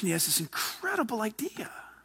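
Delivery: suspenseful, soft, hushed storytelling whisper.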